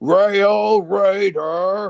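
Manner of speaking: loud booming voice, the word rail drawn out. Showing how a train character would sound: Blue Comet voice. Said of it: "Blue Comet's voice would sound like this".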